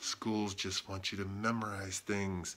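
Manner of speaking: hushed whisper. Asked why he is whispering, the speaker keeps whispering. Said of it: "I'm whispering because it's a secret".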